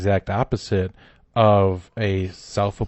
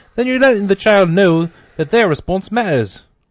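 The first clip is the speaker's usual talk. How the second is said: fake Australian accent, higher and louder; 11 semitones higher, 7 dB louder than usual. Reading out an educator's quote in a put-on australian accent. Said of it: "Trying to put that accent on".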